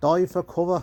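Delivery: sudden slip into an Irish accent. Narrating a video, echoing their own phrase: sudden Irish accent. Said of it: "my accent changed right there and I don't know why I went Irish".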